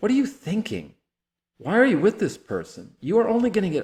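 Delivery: very high-pitched, angry, confrontational outburst. Showing how one might speak to a friend dating someone hurtful: tone of anger. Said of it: "I can say in a tone of anger".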